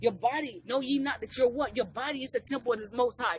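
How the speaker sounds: ordinary delivery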